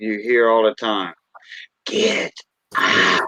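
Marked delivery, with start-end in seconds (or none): 1.8-3.3 eerie, spooky, ghostly horror-film voice. Doing the voice heard in haunted houses: haunted house voice. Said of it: "that them haunted houses voice".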